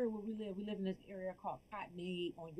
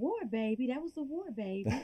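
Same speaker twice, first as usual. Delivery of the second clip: put-on Deep South American accent; 3 semitones higher than usual. Retelling what her grandmother would say at night, in a Southern US accent. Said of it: "that Southern accent".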